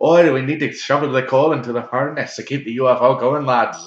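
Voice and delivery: very loud put-on Irish accent. Describing an imagined scene of little green men in a ufo: irish accent impression. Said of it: "they're all like Irish".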